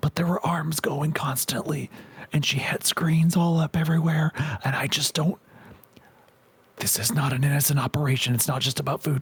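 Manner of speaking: speaking quietly. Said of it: "talked in hushed tones".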